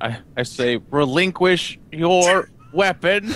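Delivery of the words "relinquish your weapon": speaking through gritted, clenched teeth. In a roleplay scene, pulling up a man hanging on the railing: through gritted teeth. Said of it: "Through gritted teeth".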